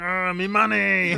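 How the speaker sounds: cartoon crab voice, very high pitched and loud. Joking about an actor's voice in a trailer: Mister Krabs voice. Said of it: "Mister Krabs, he's gonna be like".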